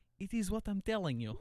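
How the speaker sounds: put-on Russian accent. Speaker quotes a former Russian coworker's saying, imitating him. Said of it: "I used to work with a Russian guy".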